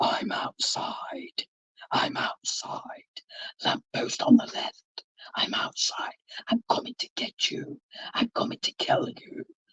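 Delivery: demonic voice, whispered, breathy, sing-song. Acting out the threatening voicemails a man used to leave on your phone, in a put-on demonic voice. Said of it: "in a demonic voice".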